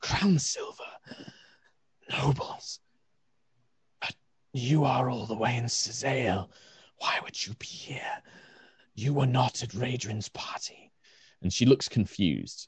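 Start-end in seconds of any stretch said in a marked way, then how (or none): 0.0-10.9 soft, scratchy, rasping voice. Narrating a scene, voicing a figure who questions the nobles, in a rasping voice. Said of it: "you just hear this kind of rasping voice".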